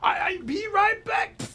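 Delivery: put-on very high shouted Swedish accent.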